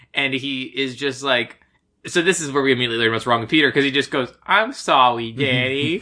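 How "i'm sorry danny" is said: put-on childlike baby voice, much slower. Retelling a movie scene, the little brother speaking to Danny, in Peter's baby voice. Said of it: "he talks like a baby".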